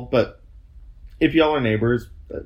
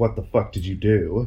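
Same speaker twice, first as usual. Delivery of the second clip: ordinary talk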